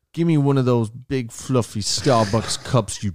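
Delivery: put-on tough-guy gangster swagger. Retelling a customer's line from a scene, imitating Bridie acting gangster. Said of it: "I can literally mimic him".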